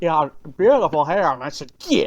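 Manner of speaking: put-on thick, heavy Appalachian mountain accent. Playing along, quoting the man just described, in a thick Appalachian accent. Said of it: "he has like a very thick Appalachian accent".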